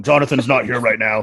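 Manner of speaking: deep, low voice. Retelling how his dad answered the phone when friends called, imitating dad's deep voice. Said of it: "he had this deep voice, and my friends thought he was Mufasa".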